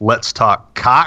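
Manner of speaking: "Let's Talk Cock" heavily stressed, stretched slow and loud. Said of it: "Wow, so much emphasis on that".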